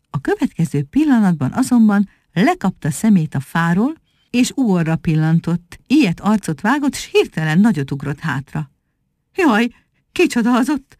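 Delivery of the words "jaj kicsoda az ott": stammering, higher pitch. Reading a monkey's line on suddenly seeing Ugor, stammering.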